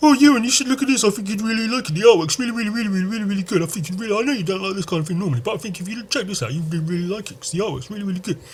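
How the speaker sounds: snide, mocking, high-pitched voice. Speaker says there's no need for that tone, then uses it anyway: mocking tone. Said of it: "Fuck it, I'll do it anyway".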